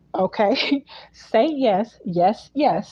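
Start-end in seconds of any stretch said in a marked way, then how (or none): 1.4-2.9 heavy, hammering stress on every single yes. Pressing the listener for an answer: stress on YES. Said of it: "Emphasis on the yes".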